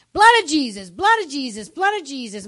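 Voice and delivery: loud, swooping, all-out yelling, over and over. Retelling a twelve-year-old yelling while a car spins: imitating someone yelling. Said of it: "but she's yelling".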